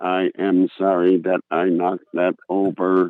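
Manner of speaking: stock sitcom robot delivery. Describing the robot daughter from an old TV show, doing the Small Wonder robot voice. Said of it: "And she talked like this".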